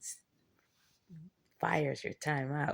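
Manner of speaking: slow, drawn-out devil voice. Acting out the devil warning people to stop: voicing the devil. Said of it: "the devil's like".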